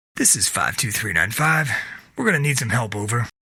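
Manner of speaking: usual speaking voice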